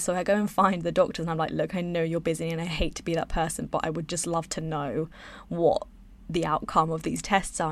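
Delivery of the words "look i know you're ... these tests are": ordinary delivery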